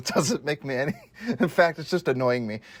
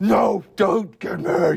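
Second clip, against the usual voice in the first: mock stern, authoritative voice, rough and high; 6 semitones higher, 4 dB louder than usual. Imagining how he might have used his commanding voice on it, in a mock commanding voice. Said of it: "use his commanding voice".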